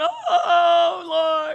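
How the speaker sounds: mock tearful outcry, very loud and high-pitched. Speaker recalling crying while driving to a job, retelling crying out. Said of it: "I'm crying about my problem".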